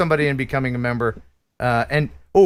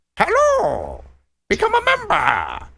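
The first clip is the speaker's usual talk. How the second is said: high, swooping, sing-song toy alligator voice; 14 semitones higher than usual. Showing a new case that looks like an alligator mouth, voicing it, alligator voice. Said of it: "Is that what an alligator sounds like?".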